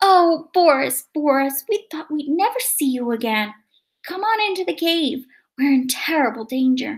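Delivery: high, calling-out cry. Narrator reading a mother greeting her son Boris, crying out. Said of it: "cried his mother".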